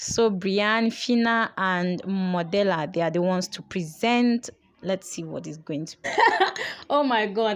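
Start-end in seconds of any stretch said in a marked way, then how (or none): 4.8-7.6 speaking while dying of laughter. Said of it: "I'm just dying of laughter".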